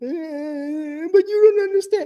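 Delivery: mock very high, slow weepy crying, eh stretched long. Retelling how a coworker answered while crying: imitating someone crying. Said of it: "Tears is flowing".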